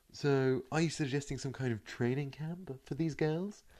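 obnoxious newsreader voice. Asking a question in a bit, obnoxious newsreader voice. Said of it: "I just really like doing the obnoxious newsreader voice".

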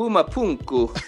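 Puma Punku said loud in exaggerated Latin accent. Asked to say the place name again with more accent: Latin accent. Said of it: "say it in your Latin voice, though. More of an accent".

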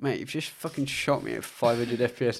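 mock voice near tears. Retelling what a shot kid said in a video, imitating someone near tears. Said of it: "like almost in tears".

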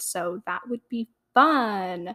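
slow sardonic drawl, fun pulled long. Saying it would be fun to have friends on the podcast: sarcastic. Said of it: "I said that so sarcastically".

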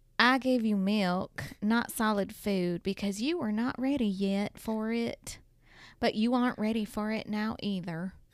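put-on country accent. Reading a Bible verse aloud after being asked for a country accent. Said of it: "Can you do it in a country accent?".

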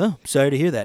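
mimicking a flat, one-note, monotone delivery. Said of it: "he literally just has one voice".

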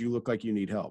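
very broken, non-native English phrasing. Retelling what a stranger at the airport said: imitating very broken english. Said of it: "said in very broken English".

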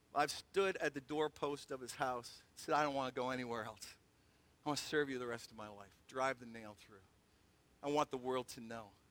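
deeply moved, low, hushed voice dropped far down. Explaining his earring to listeners, getting emotional. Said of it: "got a little emotional there".

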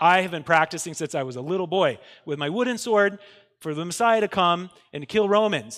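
usual speaking voice

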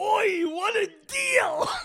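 mock very high, very slow, stretched-out shout. Retelling what a pictured figure in an ad said: imitating someone yelling. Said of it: "he was yelling".

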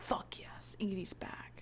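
soft, unvoiced, excited whisper.

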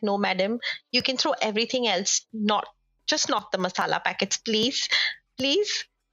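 usual speaking voice

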